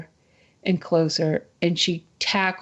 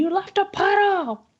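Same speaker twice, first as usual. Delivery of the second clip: put-on very high, stretched, drawn-out laughing holler. Retelling how a friend pointed at the puddle, imitating a laughing yell. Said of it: "threw her head back and started laughing, yelling".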